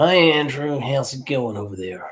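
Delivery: cowboy manner of speaking. Retelling a phone call from young Eric in LA: imitating Eric. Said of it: "he used to be a cowboy, didn't he?".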